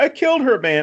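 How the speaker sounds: goofy, whiny delivery. Retelling a film character's line the next day: imitating a goofy delivery. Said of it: "a very goofy deliverance of that line".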